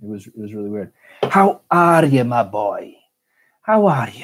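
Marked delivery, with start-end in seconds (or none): 1.2-4.2 put-on old Scottish man voice, louder. Streamer speaks to chat, trying an old Scottish man voice. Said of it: "I'm trying to get the old Scottish man voice".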